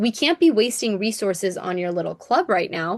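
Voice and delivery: condescending, belittling, dismissive talking-down tone. Retelling a show scene where Betty scolds Reg: imitating a condescending tone. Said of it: "Betty's super condescending here".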